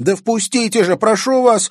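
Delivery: very high, very loud, frightened shriek or squeal. The narrator reads a girl begging at a door as pursuers close in, frightened squeal. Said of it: "испуганно взвизгнула девчонка".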